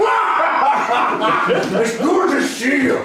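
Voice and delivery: hearty, slow, loud, laughing shout.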